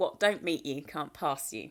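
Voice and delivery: put-on very broad, strong West Indian accent. Quoting grandmother's favourite saying, in a broad West Indian accent. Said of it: "said in a very broad West Indian accent".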